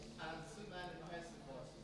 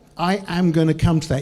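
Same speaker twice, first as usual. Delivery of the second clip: full I am, am spelled out and stressed. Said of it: "I'm gonna come to that".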